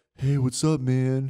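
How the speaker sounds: laid-back cool cop voice. Trying out voice ideas for a cop character; cool cop voice. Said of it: "a cop that's like a cool what?".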